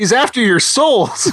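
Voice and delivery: high, slow, dramatic, drawn out through a laugh.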